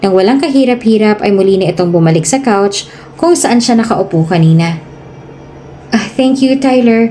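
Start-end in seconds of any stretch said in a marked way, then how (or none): 6.2-7.1 bashful, shy, embarrassed. Thanking someone who just brought her jacket back, shy and embarrassed. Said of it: "nahihiyang sabi naman ni [name]".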